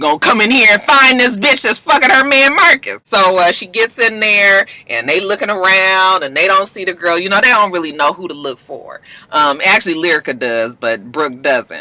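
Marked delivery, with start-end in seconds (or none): 0.0-3.0 put-on angry, fired-up, fuming voice. Recapping how Brooke comes in looking for a woman; mock-angry Brooke. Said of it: "Brooke mad".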